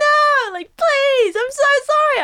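very high, stretched-out, apologetic pleading cry. Retelling the yell that was wanted for a recording: imitating a yell. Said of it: "I wanted to yell".

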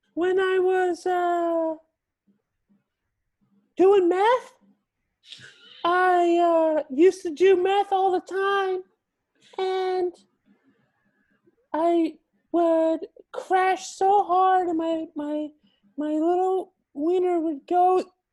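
very high-pitched voice. Telling about a problem, as a game asks: highest voice. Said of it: "tell us about a problem that you had in your highest voice".

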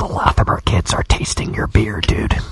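breathy, whispered stage whisper aside. Acting out a whispered aside about kids tasting the beer: acting out a whisper. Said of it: "I was gonna whisper".

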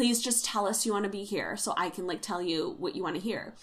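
mock pleading, begging tone. Retelling how Sarah pleaded with Rosie, imitating someone begging. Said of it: "Sarah's begging pleading her".

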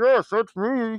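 smothered, muffled, very high voice. Retelling how a man in a bag answers the security guard: voice muffled from inside a bag. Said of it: "And it's like muffled from the bag".

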